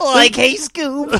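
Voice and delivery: very high, squeaky cartoon-sidekick voice. Calling out to Scoob while joking around with someone, doing a Shaggy impression. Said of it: "That was a nice casey case of Shaggy".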